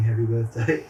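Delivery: ordinary talk, nothing marked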